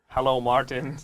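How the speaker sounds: robotic, mechanical voice. Demonstrating how a chatbot would greet a user, robot voice. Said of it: "That would be how the bot would speak".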